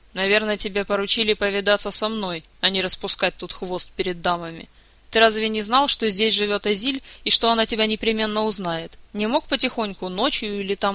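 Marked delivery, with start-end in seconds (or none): none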